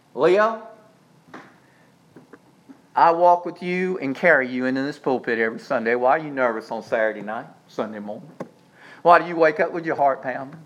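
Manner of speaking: mock deep, very low, soft, loving fatherly tone. Quoting what a man often tells him, the speaker is imitating a loving, fatherly tone. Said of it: "with a very loving, fatherly, compassionate tone".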